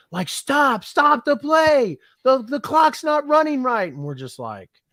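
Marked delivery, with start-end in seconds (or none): 0.2-3.9 mock very high, shrill, loud, drunken belligerent screaming. Retelling what a drunk fan two rows over yelled: imitating someone screaming loudly. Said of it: "he's screaming at the top of his lungs".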